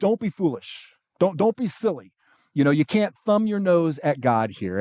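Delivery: put-on grave, dead-serious, earnest voice. Paraphrasing Paul's warning not to mock God: imitating Paul's serious tone. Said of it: "the seriousness in his tone right here".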